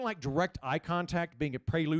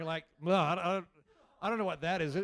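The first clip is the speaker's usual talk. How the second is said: plain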